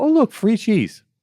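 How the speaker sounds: very high, loud, gleeful delight. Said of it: "people walk right up there and go".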